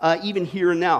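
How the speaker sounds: plain reading voice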